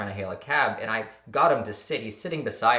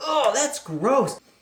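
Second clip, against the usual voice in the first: put-on very high, whiny babyish voice; 5 dB louder than usual. Retelling a friend refusing to lie down: imitating a whiny big baby. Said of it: "He was like a big baby".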